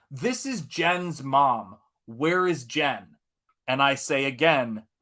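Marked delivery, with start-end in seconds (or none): 0.1-3.0 put-on American accent. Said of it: "in an American accent says".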